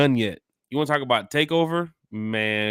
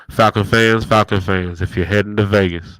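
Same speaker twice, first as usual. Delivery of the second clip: put-on preacher voice; 9 dB louder than usual. Announcing to Falcon fans over the microphone, Baptist preacher voice. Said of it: "he's got his Baptist preacher voice on".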